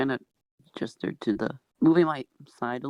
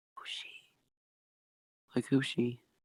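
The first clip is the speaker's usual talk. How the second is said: soft, hushed, breathy whisper; 2 semitones lower, 7 dB quieter than usual. Whispering a question into another character's ear: whispering in character. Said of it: "I'm gonna whisper into him".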